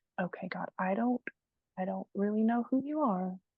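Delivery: sobbing, crying voice. Retelling a prayer on a grandma's porch: retelling a sobbing prayer. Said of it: "And just sobbing".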